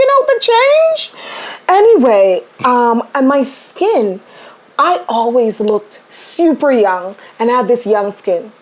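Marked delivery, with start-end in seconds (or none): 0.0-1.1 very high-pitched, fast delivery. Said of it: "And I go".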